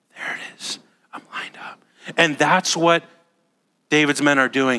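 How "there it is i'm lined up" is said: hushed mock whisper, quieter. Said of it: "it's very quiet".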